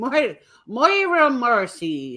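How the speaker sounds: stage pirate voice with an Irish edge. Repeating a name one more time for the show, in a pirate voice. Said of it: "but I sounded like a pirate".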